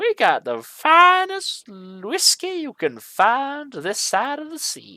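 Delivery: strange, very high, swooping sing-song voice shift. Replying to an order for a bottle of whiskey, weirdly changed voice. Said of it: "It then changes voice weirdly".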